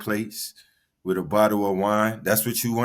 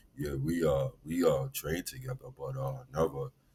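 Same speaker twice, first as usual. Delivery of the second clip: heavy, very low put-on deep voice; 7 semitones lower, 9 dB quieter than usual. Mocking a player's claim about training together, imitating his deep voice. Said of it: "let me put on his deep voice".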